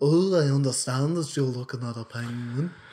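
put-on British accent squeezed through the nose. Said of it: "impersonate British people ... nasal".

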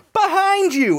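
mock, shrill, very high shouted cry. Retelling a movie scene where she warns the cop: imitating someone shouting. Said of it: "And she shouts".

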